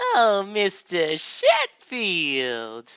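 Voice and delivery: put-on high, swooping, sing-song, odd American accent. Explaining an accent by imitating it, Fran Fine accent. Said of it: "weird uh, American accent".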